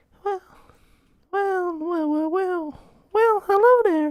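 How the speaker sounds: very high, squeaky put-on female voice. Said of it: "a woman with a squeaky ass voice".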